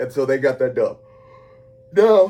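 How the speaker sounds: very loud, yawning mid-sentence. Host recapping a game at the end of a very long day, yawning while talking. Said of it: "sorry, I'm yawning".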